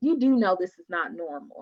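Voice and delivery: plain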